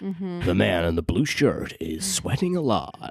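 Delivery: epic, dramatic movie-trailer narrator voice. Speaker describing a guy narrating strangers in the street, doing the Honest Trailers voice. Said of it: "doing the voices".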